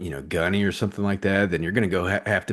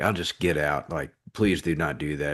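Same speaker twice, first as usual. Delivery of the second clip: put-on pleading, begging voice, lower; 3 semitones lower than usual. Retelling begging the lady not to change the MOS: imitating own begging. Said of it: "begging her".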